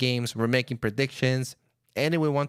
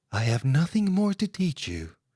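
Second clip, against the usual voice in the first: sing-song character voice with wide swooping pitch; 3 semitones higher than usual. Closing an episode without music, doing an impression of Zenyatta. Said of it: "I will try to do my best impression of Zenyatta".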